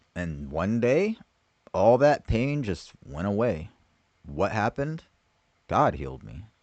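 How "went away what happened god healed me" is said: normal talking voice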